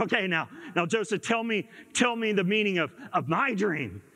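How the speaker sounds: normal talking voice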